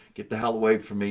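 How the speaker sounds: normal talking voice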